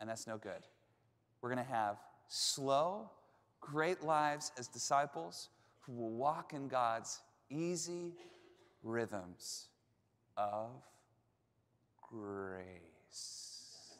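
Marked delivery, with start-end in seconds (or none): 1.4-14.0 slow, deliberate, unhurried delivery, every word spaced. Preaching about god's easy rhythms of grace, saying the sentence slowly. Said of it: "Thought I'd just say it slowly".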